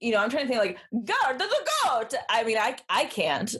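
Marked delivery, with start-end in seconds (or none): 0.9-2.1 fake Swedish accent, much higher, slower. Asked if you can do a Swedish accent, trying one anyway. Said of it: "do you know how to do a Swedish accent?".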